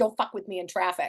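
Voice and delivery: put-on Boston accent. A guest who grew up in California shows off a Boston edge, in a put-on Boston accent. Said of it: "you just busted out that accent".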